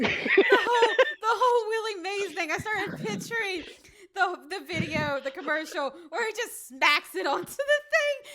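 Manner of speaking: high, loud speech bursting with giggles. Describing a pictured commercial while unable to stop: laughing while talking. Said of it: "I can't stop laughing now".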